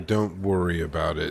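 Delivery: ordinary delivery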